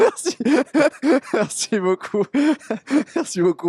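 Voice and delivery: high voice, breaking into giggles.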